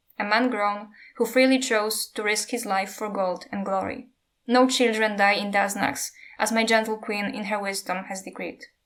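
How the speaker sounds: usual speaking voice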